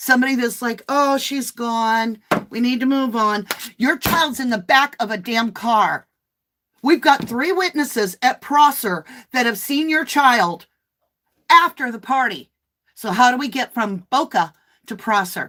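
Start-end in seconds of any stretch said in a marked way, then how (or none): 3.8-15.5 worked-up, indignant, heated, exasperated rant. A mom confronting a parent about their child's whereabouts, yelling. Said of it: "I'm sorry I'm yelling".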